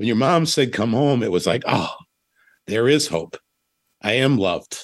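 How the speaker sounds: choked-up, emotional, voice catching. Speaker tells the other person what their mom's words meant to them, choked up. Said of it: "I'm getting choked up".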